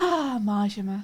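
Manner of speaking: wistful, dreamy, swooning lovestruck sigh. Rereading a chat message as if sighing from a window: dreamy sighing like a Disney princess. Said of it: "like a Disney princess with, like, your head on your palm and sighing".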